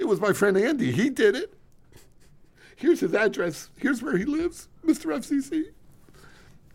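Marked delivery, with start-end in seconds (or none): 0.0-5.6 very high, pleading, begging mock voice. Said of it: "My quick impression of Ken".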